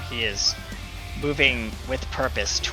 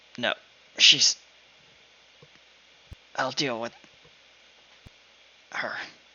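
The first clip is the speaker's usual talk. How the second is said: very pained, strained voice, much faster. Voicing a hurt character answering his companions, in a very pained voice. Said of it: "a very pained voice say".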